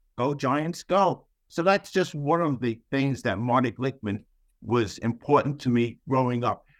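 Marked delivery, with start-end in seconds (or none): 0.2-1.3 play-acted loud cheering, full of enthusiasm. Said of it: "So I'm yelling".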